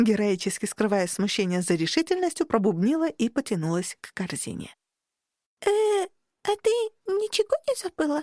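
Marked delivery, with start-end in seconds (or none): 5.6-8.2 very high-pitched, slow, puzzled, perplexed voice. The librarian asks the narrator from behind her, in a puzzled voice. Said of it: "озадаченный голос".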